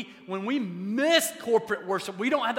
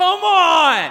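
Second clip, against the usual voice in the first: very loud, stretched-out, drawn-out cheering holler; 8 semitones higher, 13 dB louder than usual. Retelling jumping up at a friend's house to cheer: retelling a yell at the TV. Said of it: "I literally jumped out of my seat and I yelled".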